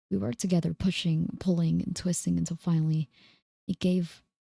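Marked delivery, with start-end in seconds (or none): none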